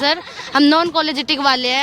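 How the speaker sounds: normal talking voice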